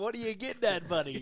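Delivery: mocking, pointed, heavily sarcastic tone. Retelling a wrestler's taunt in a promo: imitating Drew McIntyre's sarcasm.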